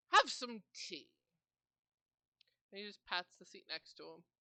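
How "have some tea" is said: put-on elderly old man character voice, louder. Voicing an old character with tea, offering tea: old man voice. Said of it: "in his old age".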